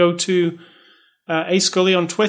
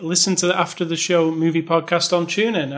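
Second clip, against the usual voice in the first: plain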